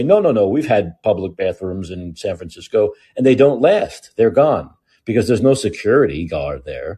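ordinary delivery

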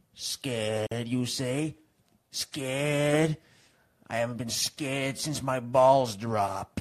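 very loud put-on northeastern Italian-American immigrant accent. Answering a companion who just said they're getting scared, northeastern Italian immigrant accent. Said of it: "why do you sound like a northeastern Italian immigrant all of a sudden".

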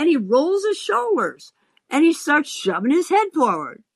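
plain

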